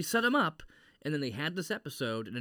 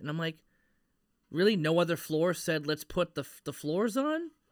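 usual speaking voice

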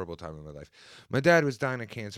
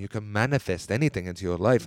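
poor put-on Indian accent impression; 5 dB louder than usual. Speaker imitates how a man on a livestream talks, put-on Indian accent. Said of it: "he talks like this".

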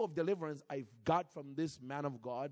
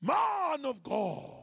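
put-on aggressive Nigerian accent, loud and swooping; 11 semitones higher, 7 dB louder than usual. Retelling a man greeting the speaker at a tv station: put-on aggressive nigerian style. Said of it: "aggressive Nigerian style".

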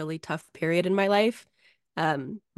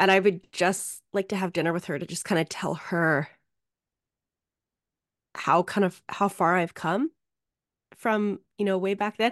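voice catching, choked-up, close to crying. Telling another speaker about wanting dinner with a late grandmother: on the verge of tears. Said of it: "I'm gonna start crying".

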